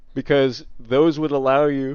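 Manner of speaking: yawning while talking. Explaining game gear to viewers, yawning while talking. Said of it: "sorry, I'm yawning".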